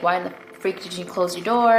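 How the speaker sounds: ordinary talk, nothing marked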